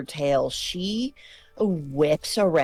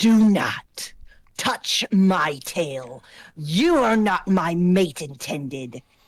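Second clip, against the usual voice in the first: menacing snarl through bared teeth. A storyteller voices a woman in the tale as she speaks: snarling. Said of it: "she snarls and she says".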